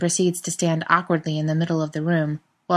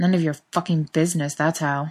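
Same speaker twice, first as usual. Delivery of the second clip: embarrassed, flustered growl. Reading a story, a man rebuffs a teasing question with an embarrassed growl. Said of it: "Jensen growls, embarrassed".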